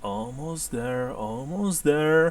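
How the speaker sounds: hushed half-whisper, under the breath. Narrating a tabletop scene, voicing an elf in the rafters, half-whispering. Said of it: "you can hear him whispering".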